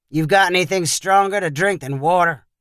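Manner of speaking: ordinary delivery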